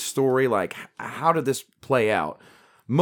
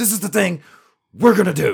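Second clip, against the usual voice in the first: choppy, abrupt stop-start delivery, pitched up; 6 semitones higher, 4 dB louder than usual. Showing Alex Jones's abrupt stop and start way of talking: Alex Jones impression. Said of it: "So he's like".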